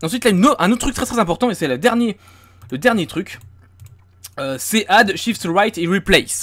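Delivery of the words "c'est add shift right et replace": English accent at a slower pace. Speaker giving the last important shortcut to the chat, english accent on english terms. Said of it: "j'ai un accent anglais incroyable".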